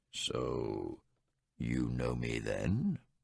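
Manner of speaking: very deep, rich, rolling voice, very slow. Reading a story aloud, voicing a magician: deep voice with rich rolling tones. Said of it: "then said in a deep voice, given to rich rolling sounds and powerful tones".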